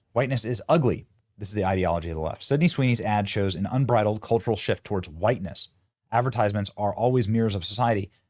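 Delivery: normal talking voice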